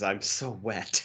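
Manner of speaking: hushed whisper under the breath. Two speakers recount a favorite movie scene; quoting the woman's line, whispering. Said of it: "she she whispers".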